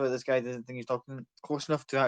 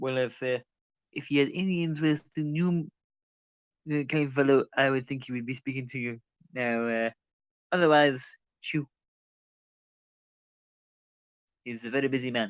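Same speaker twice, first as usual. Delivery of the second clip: very bad, fumbling cartoon character voice. Voicing a busy man's attendant who shoos a player: bad Stewie Griffin voice. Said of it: "my very bad attempt at Stewie Griffin".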